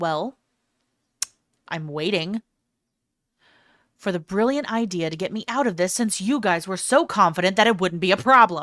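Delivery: put-on annoyed, exasperated, glaring tone. Acting out the heroine glaring at the foolish men: put-on annoyed glaring tone. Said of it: "she's just glaring at these idiot men like".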